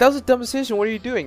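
mock-panicked yelling. Describing playing a horror game, retelling panicked yelling at self. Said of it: "I'm yelling at myself because I'm panicking".

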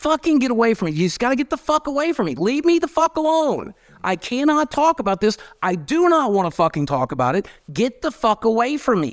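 put-on, shrill, very high-pitched angry yelling outburst. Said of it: "I'll act one out right now".

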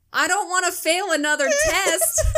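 piping, squeaky, very high-pitched voice. Retelling a friend's reply about a hearing test: imitating Blake. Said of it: "the way he said it, I didn't do it any justice".

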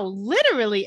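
strong, hard stress on the word "literally". Recapping a show, quoting a character's reply, with stress on 'literally'. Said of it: "Emphasis on the literally".

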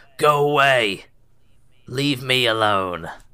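put-on gruff old man voice. Narrator voicing someone shouting from inside at visitors: gruff old man voice. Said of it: "A very gruff old man from within".

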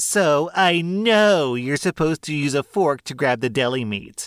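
loud, shrill, entitled, lecturing voice. Retelling what a sergeant told the sandwich bar worker: imitating a loud Karen voice. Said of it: "in her most Karen and loud voice says".

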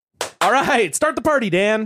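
high, loud, over-enthusiastic youth pastor hype. Doing a requested take of a line to dan as an over-enthusiastic youth pastor. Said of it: "Say it like a over enthusiastic like youth pastor".

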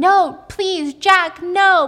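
very loud, slow, drawn-out begging scream. Retelling a film scene where a character is dragged away: imitating someone screaming. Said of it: "she's screaming".

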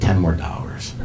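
ordinary talk

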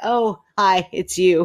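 slow, breathless, relieved, catching breath. Reading a story aloud, greeting a cat: relieved and out of breath. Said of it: "Relieved and trying to catch my breath".

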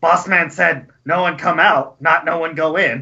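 put-on muscular goblin voice. Storyteller voicing muscular goblins standing outside, goblin guard voice. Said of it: "They all kind of look at you and".

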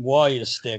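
put-on Boston accent. Recalling what the coach always said, imitating Chief's Boston accent. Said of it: "He did the Boston accent".

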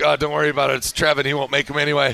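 low mutter. Retelling a remark Diogo made under his breath, imitating Diogo muttering. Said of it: "Diogo mutters like".

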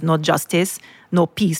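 plain

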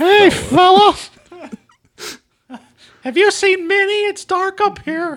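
high squeak with drawn-out vowels. Answering another speaker's joke voice, doing Mickey Mouse meets John Wayne. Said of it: "Sounds like Mickey Mouse meets John Wayne".

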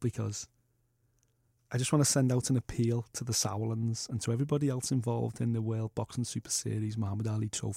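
speaking in a low voice. Sending out an appeal to the sauerlands, talking under breath. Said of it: "Why are you talking under your breath?".

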